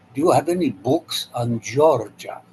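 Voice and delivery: put-on Polish accent, "Georgia" said clearly. Retelling how a man asked the cashier for books, Polish accent. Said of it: "in his uh, Polish accent".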